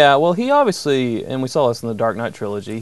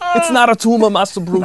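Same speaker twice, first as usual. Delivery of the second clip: very high-pitched put-on Austrian accent; 10 semitones higher, 3 dB louder than usual. Trading impressions with others, offer yours of Master Bruce's butler as an Arnold Schwarzenegger impression. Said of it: "I got an Arnold Schwarzenegger".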